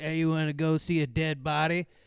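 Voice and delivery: rough, gravelly put-on voice. Complaining about a band to a friend, the speaker imitates the duo's gravelly-voiced member. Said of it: "this gravelly voice guy".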